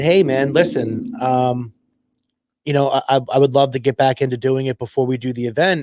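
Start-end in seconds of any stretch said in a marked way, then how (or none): none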